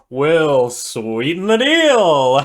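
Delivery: loud, slow, slick, smarmy sleazy salesman voice. Quoting the episode's salesman characters: imitating a sleazy charismatic salesman. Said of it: "kinda like a sleazy, charismatic salesman".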